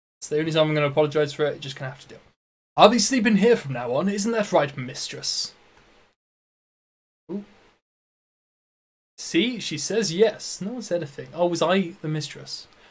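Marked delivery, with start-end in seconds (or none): 2.8-5.5 put-on upper-class English accent. Reader voicing a character, using the same voice for everyone: posh British voice. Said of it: "everyone's going to have the same posh British voice".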